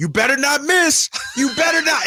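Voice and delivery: rising, shouted mock heckler yell. Retelling what he yelled out while Keon was at the line, retelling a yell. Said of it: "He's yelling out".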